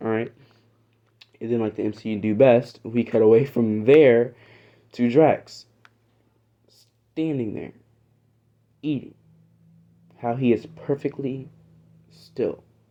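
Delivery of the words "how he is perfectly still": slow speech, long gaps, quieter. Describing a Marvel scene of Drax standing still, talking slowly with long gaps. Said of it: "I'm talking slowly and I'm taking these gaps".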